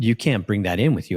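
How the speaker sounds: normal talking voice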